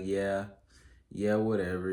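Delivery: mock sarcastic, dismissive tone. Imitating a person brushing off good news: imitating a sarcastic brush-off. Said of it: "just sarcastic, like".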